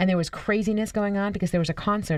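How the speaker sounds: ordinary talk, nothing marked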